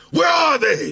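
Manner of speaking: very high-pitched, shouted heroic voice. Asking his girl where his sneakers are, in a Batman voice. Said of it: "That's the Batman voice right there".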